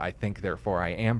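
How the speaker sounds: plain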